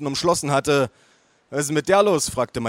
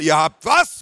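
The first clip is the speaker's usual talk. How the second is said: loud, bellowing, roaring outburst; 6 dB louder than usual. At a family meal, the narrator roaring at the family. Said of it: "brüllte ich".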